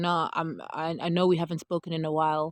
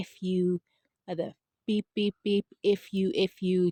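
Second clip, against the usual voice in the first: fierce, intense, angry cursing outburst; 2 semitones higher than usual. Retelling a young boy cursing at his mother in public: imitating a boy cursing intensely. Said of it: "saying it with such intensity".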